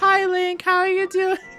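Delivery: very high, put-on generic girly voice. Showing a generic girl voice greeting Link: generic girl voice. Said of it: "generic girl voice".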